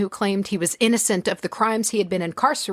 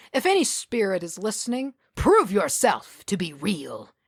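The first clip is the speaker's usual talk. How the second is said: haughty, arrogant, know-it-all tone with swooping pitch. Reading a story aloud, speaking to spirits through a laptop: arrogant tone. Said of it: "With a tone of arrogance".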